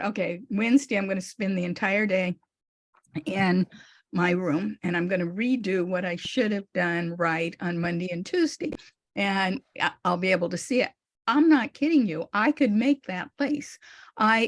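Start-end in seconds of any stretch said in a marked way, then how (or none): none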